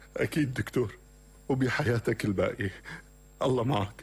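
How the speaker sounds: tearful, weeping, crying voice. Ending the hospital call about his brother's death, a man answers the doctor: crying. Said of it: "ليش عم تبكي [name]؟".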